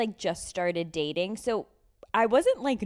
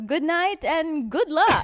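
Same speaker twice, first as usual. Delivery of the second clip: put-on Italian accent, high-pitched and raised; 10 semitones higher, 5 dB louder than usual. Retelling what the room service man said as he left, in an Italian accent. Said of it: "like in his Italian accent".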